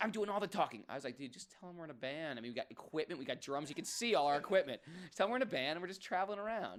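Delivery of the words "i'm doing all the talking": put-on Rhode Island accent. Quoting what he said to the speaker, hard Rhode Island accent. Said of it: "this hard Rhode Island accent".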